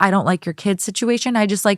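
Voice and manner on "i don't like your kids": ordinary talk, nothing marked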